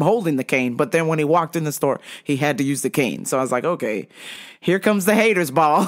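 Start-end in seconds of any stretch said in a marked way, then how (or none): none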